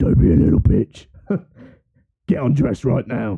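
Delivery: low put-on voice. Imagining hearing your child play with a doll, then a deeper voice from the room. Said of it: "a deeper voice from the same room going".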